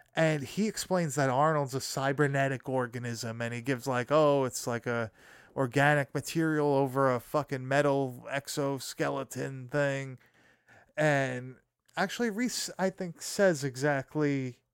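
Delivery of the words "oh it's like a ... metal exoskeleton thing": ordinary talk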